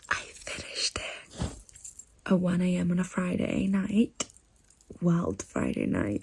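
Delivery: quiet, kept-low voice. At one a.m., talking about finishing a book, quiet late-night voice. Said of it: "I have to be quiet because it's one a m".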